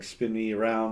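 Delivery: ordinary delivery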